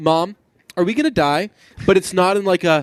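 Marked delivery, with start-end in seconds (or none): 0.0-1.5 put-on calm childlike voice, higher. Retelling a child's line during a fire: imitating a calm child. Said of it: "she very calmly says to her mother".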